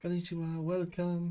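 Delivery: kind, gentle, high-pitched, friendly voice. Speaker describing how security staff greet people, imitating a soft, gentle greeting. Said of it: "friendly and efficient and soft and gentle".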